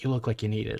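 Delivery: soft, hushed, confidential half-whisper. Describing a woman who leans in close as if with a gift, retelling a half-whisper. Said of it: "And she whispers".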